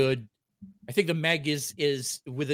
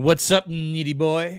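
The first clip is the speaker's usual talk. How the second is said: mocking put-on voice; 2 semitones higher than usual. Making fun of a buddy by imitating him: mocking imitation of Eric. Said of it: "make a little bit of fun here of our buddy Eric".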